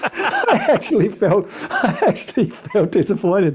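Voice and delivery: high-pitched, laughing through the words.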